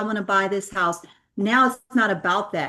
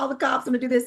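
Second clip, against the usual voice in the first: held-back, half-strength mild scream; 4 semitones higher than usual. Recounting renters speeding in your rental cars on the freeway, retelling a scream. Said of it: "I'm screaming".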